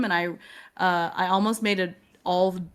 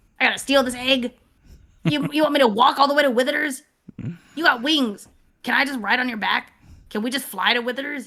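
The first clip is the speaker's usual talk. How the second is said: high, loud, squeaky little gremlin voice; 6 semitones higher, 6 dB louder than usual. Playing Lorenzo during a game session, talking to another player; Lorenzo's little gremlin voice. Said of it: "I never get to use this voice".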